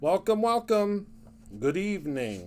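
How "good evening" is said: low, spooky put-on ghostly haunted-house voice. Greeting everyone at the start of the evening, in a spooky voice. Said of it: "in my best spooky voice".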